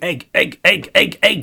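very high, very loud, shrill shouting. In a tabletop game, the lights go out and a player's character starts shouting. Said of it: "I start shouting".

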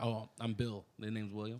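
ordinary talk

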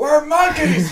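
put-on shrill, very high, loud scream. Recalling 139 episodes of it, re-enacting own screaming. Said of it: "of me just screaming".

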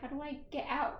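ordinary talk

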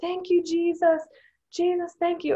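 high, screaming at the top of the lungs. Retelling how a man on his knees thanked Jesus: imitating someone screaming. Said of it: "started screaming".

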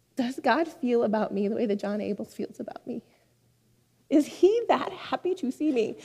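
voice choking up, about to cry. Speaker talking about someone who makes them feel they matter, about to cry. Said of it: "sorry, I'm going to cry".

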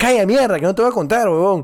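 put-on irritated snap. Recounting his own earlier reply when he was angry, retelling an angry retort. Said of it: "yo estaba enojado y digo".

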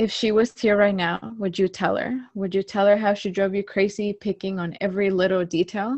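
ordinary talk, nothing marked

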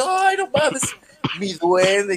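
mock-thrilled, swooping, excited exclamation. Telling a story about a cousin opening his gift, imitating excited cousin. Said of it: "él viene emocionado".

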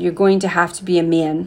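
plain

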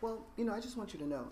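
very proper, prim, dainty, soft, high delicate speech. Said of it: "she's very proper and dainty".

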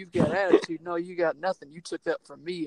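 berating, ranting tone. Retelling a wrestling promo aimed at Vince McMahon: retelling a berating rant. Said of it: "just berating him".

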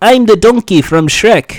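put-on heavy Eastern European accent. Retelling what a guy said, in a Niko Bellic impression. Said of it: "it was like Nico Bellic".

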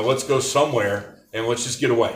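plain

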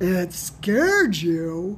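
loud, exclaiming voice. A caller on the phone replies to the narrator's admission, exclaiming loudly. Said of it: "Sam exclaimed loudly into the receiver".

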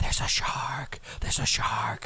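alarmed, breathy whisper, barely voiced. Imagining the guy at the beach who can only whisper, acting out a whisper. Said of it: "like whispering".

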